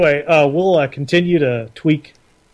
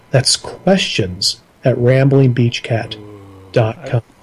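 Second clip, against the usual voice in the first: low, seductive, sultry delivery; 4 semitones lower than usual. Repeating the email address once more when asked: sultry voice. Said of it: "I like how sultry that was".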